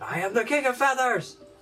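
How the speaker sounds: very high, ringing, proclaiming shout. Describing an echo from the corner: echoing the same shout. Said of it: "You're gonna hear in the same voice".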